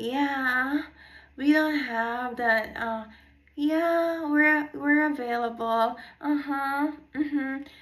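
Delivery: put-on slow Californian valley girl drawl, long drawn-out yeah. Retelling how someone talks on the phone: imitating Madison's valley girl voice. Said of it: "trying to be a valley girl, like a Californian girl".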